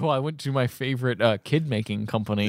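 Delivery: normal talking voice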